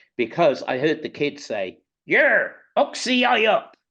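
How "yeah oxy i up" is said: put-on Bristol accent, high, slow, very drawn out. Retelling what a kid said nearby: imitating a Bristol accent. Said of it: "it was that Bristol accent".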